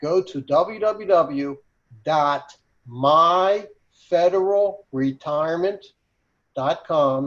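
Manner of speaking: very slow, drawn out, deliberate, each piece clear. Giving a website address so everybody hears it: saying it very slowly. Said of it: "I'll say the website very slowly".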